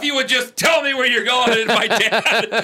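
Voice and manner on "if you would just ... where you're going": high put-on fed-up, irritated, pissed-off snap. Recalling parents getting in each other's way in the kitchen, mimicking mom getting pissed. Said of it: "my mom gets all pissed and goes".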